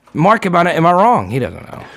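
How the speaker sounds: ordinary talk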